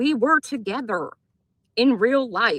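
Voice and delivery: slowed-down, deliberate speech. Repeating yourself to someone who screamed at you on their channel, said a little slower. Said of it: "Let me say it a little slower for you".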